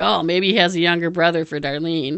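ordinary talk, nothing marked

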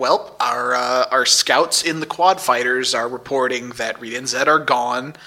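ordinary talk, nothing marked

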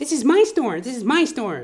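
very high, shrill scream. Retelling a store cashier confronting a customer: imitating someone screaming. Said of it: "She's screaming at the guy".

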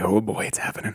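ordinary talk, nothing marked

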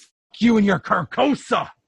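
all-out, high, loud screamed delivery. Voicing a defeated figure throwing energy at a player: screaming. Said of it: "he screams".

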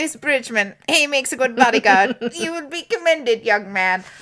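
acted king voice, audibly shaken. Narrating a game scene, the speaker voices the shaken king: Elokar voice. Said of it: "I can't stop doing the Elokar voice".

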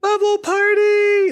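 very high, cute cheering cry. Imagining the king shouting to the whole world once it takes over, cute shouting voice. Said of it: "I imagine it being a cute voice".

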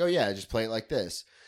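plain

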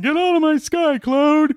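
mock grumpy old man shout. Joking about complaining like old men: mock old man yelling. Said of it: "Old man yells at cloud".

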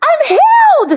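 high, slow, overjoyed shout. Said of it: "and he goes".

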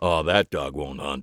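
grimly chuckling. A man turns down an offered refund, speaking with a grim chuckle. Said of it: "he said with a grim chuckle".

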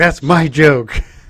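put-on irritated, put-out, pissed-off tone. Retelling a scene from an episode, imitating an angry retort. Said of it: "he gets all pissed off".

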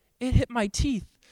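soft, sweet-spoken, nicest little voice. Retelling what a woman said when the speaker checked on her: softest, nicest voice. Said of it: "in just like the softest, nicest voice".

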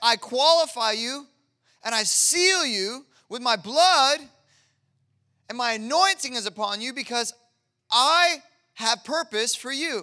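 overexcited, very loud yelling. Preaching to listeners, voicing what God said: yelling, overly excited. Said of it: "I'm like been yelling and like overly excited a lot".

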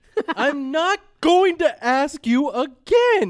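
high, loud, slow yell.

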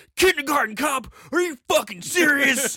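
play-acted, enraged, loud, high-pitched outburst. Retelling what a man at the other bar shouted, imitating an enraged man. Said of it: "He got so enraged at Kindergarten Cop".

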